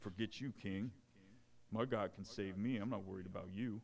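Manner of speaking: soft put-on Brooklyn New York accent. Speaker voicing Shadrach, Meshach and Abednego addressing the king, in a Brooklyn accent. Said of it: "that was my Brooklyn accent".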